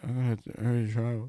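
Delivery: indistinct, quiet mumble, kept down, barely voiced. Retelling how a guy answered the teacher, imitating someone mumbling. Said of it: "He's mumbling".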